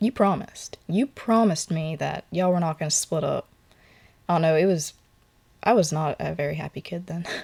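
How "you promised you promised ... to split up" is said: put-on angry voice. Retelling confronting a father after the divorce: retelling being mad. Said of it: "I got so mad at my dad".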